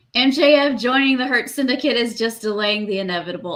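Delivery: normal talking voice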